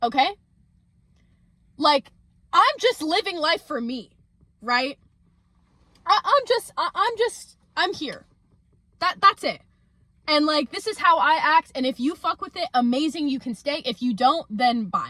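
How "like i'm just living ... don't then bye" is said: heated, emphatic, passionate and fired-up delivery. Getting passionate about living life your own way: yelling passionately. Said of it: "yes, I'm yelling right now".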